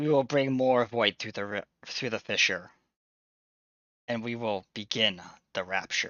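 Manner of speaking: weird, distorted, alienish voice. Voicing the Void speaking over comms: weird distorted alien voice. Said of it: "weird distorted kind of, like, alienish voice that seems like if death incarnate could speak".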